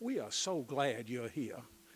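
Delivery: loud, best-effort put-on American Southern accent. Acting out what people said, in a put-on Southern accent. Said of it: "let me do this in my best Southern accent".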